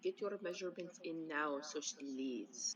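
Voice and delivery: very quiet half-whisper. As Nox, speaking to the party: lowered voice, half-whisper. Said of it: "lower her voice and whisper to the party".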